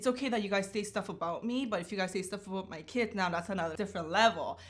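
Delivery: plain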